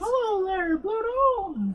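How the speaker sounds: squeaked out, very high-pitched. Saying they can't do it, the speaker tries a Mickey Mouse voice. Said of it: "a Mickey Mouse uh, voice".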